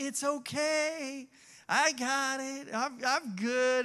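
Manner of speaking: mock-calm soothing voice. Retelling how the dad reassured everyone while the brother panicked: imitating super calm reassurance. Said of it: "he was like super calm, super relaxed".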